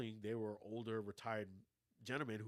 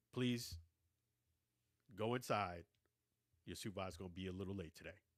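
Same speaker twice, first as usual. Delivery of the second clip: imitated stern tone, lower pitch; 3 semitones lower than usual. Quoting what a man said to the speaker, mock-stern voice. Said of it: "In a stern voice".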